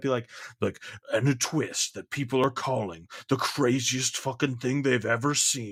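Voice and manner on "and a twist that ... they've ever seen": film preview narrator delivery. Complaining about movie previews that hype a twist, the speaker mimics one: movie trailer voice. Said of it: "good movie voice".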